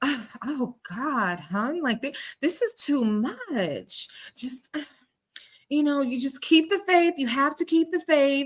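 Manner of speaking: flustered huffing and puffing, much drawn out. Contrasting two women, acting out how Shirley would react, huffing and puffing. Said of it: "she would be huffing and puffing".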